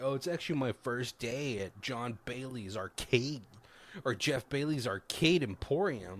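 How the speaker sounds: normal talking voice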